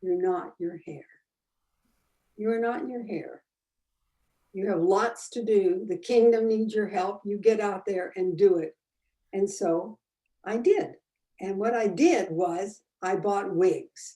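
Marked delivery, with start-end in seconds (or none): 0.0-8.8 put-on very sweet, gentle voice. Retelling how a voice spoke to them after a little knock: imitating a very sweet voice. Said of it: "a very sweet voice said to me".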